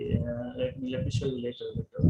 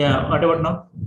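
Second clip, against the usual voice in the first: raised, louder voice. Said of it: "can you please raise your voice little bit?".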